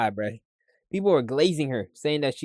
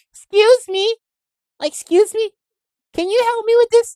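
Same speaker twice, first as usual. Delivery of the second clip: way too high, shrill, very loud voice; 11 dB louder than usual. Imagining someone asking for help, the speaker mimics them in an overly high-pitched voice. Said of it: "They be having a overly high pitched voice".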